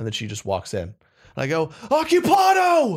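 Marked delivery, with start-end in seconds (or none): 1.9-3.0 sudden, very high, shrill, startled yell. Retelling being startled when housekeeping walked in: retelling a startled shout. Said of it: "'Cause I was startled".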